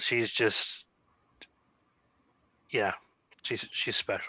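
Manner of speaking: soft, emotional voice catching in the throat. Talking about a special child, choked up. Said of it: "I'm getting choked up thinking about it".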